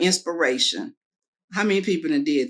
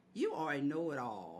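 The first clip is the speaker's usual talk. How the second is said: heavy, put-on, laid-on, very sarcastic tone; 4 semitones lower, 17 dB quieter than usual. Retelling what people always say to the speaker: imitating a very sarcastic remark. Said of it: "in a very sarcastic manner".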